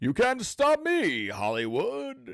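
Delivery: booming very high hero voice. Retelling how a movie character speaks: imitating a stereotypical hero voice. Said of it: "a stereotypical, uh, hero voice".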